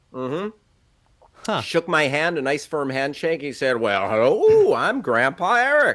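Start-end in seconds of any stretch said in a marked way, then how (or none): 3.7-5.9 big, drawn-out swooping delivery. Retelling how a man came over, shook hands and introduced himself, a really good Grandpa Eric impression. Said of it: "a really good impression of that guy".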